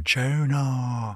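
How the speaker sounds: very high, drawn-out, stretched Tuna. Describing a meme they and their mates repeat: imitating the Tuna meme call. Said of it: "we have to go".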